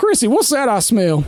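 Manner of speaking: high, acted character voice. Speaker voicing a character talking to Chrissy, accidentally in Perry's voice. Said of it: "I got to bring this one down".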